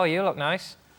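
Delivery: meant sincerely, but comes out sounding sarcastic. Showing how even meant words come out: sincere but sounds sarcastic. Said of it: "you inherently sound sarcastic".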